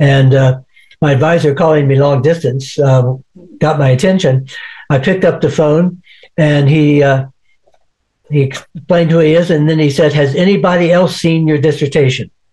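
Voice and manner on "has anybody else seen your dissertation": ordinary delivery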